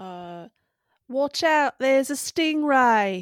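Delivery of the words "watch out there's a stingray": very loud, slow, high belted call. Guessing what Steve Irwin would say: Steve Irwin impression. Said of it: "What's something Steve Irwin would say?".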